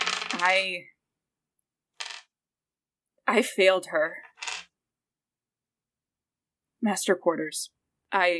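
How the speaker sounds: sobbing, halting speech, crying through every word. Voicing a character in a game scene as she starts crying: crying. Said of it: "she just starts crying".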